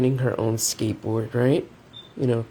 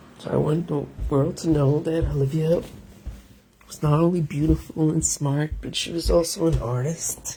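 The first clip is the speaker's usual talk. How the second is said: pushing through, holding back tears; 3 semitones higher than usual. Telling about Olivia and the sweatsuits made in her memory: holding back tears. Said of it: "I'm trying not to cry".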